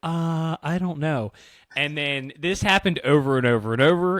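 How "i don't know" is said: acted, slow, hesitant, uncertain manner. Retelling a waitress's answer about pineapple: imitating an unsure waitress. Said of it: "she sounded like she wasn't sure".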